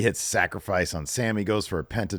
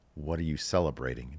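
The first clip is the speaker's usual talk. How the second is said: very stern and serious, not shouting; 5 semitones lower, 7 dB quieter than usual. Retelling how Liv confronts the others, not yelling: imitating Liv, stern. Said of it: "she's not even yelling. She's just".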